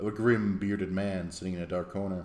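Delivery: plain reading voice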